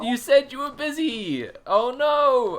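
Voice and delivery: very high, loud, crying through the words. On stream, reacting to someone who said they were busy: tearful, crying while talking. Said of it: "I'm crying".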